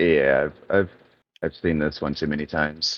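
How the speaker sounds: deep, very low, quiet mutter under the breath. Muttering in character to another character while others rush forward: muttering in character. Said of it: "I'm gonna mutter to Sensei here".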